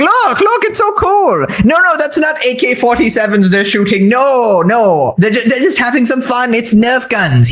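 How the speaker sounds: eager, excited, gushing voice with swooping pitch. Mocking a fan showing music videos to friends: imitating an excited fan. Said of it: "be like".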